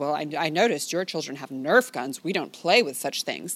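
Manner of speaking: superior, snooty, disapproving, judgmental tone. Acting out how not to say it, with judgment: mock snooty, judgmental tone. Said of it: "without having this air of judgment about it. Like".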